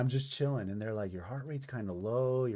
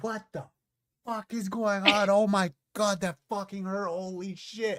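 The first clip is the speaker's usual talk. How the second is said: put-on, loud, high-pitched, frantic all-out screaming; 9 semitones higher, 6 dB louder than usual. Recounting being hurt in a children's hospital, the speaker reenacts their own screaming. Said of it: "I'm screaming".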